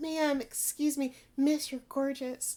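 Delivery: put-on flowery, respectful tone. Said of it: "here he is being like".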